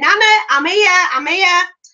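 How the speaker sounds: put-on very high-pitched child's shout, calling out. A grandmother retells her granddaughter calling from down the street; imitating a child shouting. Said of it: "you could hear her shouting".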